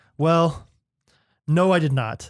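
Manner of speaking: put-on hesitant, pausing delivery. Acting out how she answers when asked about her room, imitating her pausing reply. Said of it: "just the way she like pauses every time".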